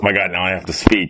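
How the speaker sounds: ordinary talk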